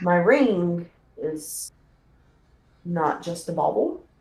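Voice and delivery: confiding, secret-sharing tone. Playing a woman who looks around before telling the player something, lowered voice. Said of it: "lower her voice and tell you".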